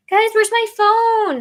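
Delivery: loud, shrill, very high-pitched yell. Searching for a phone, speaker calls out to the guys, yelling. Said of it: "Sorry, I'm yelling".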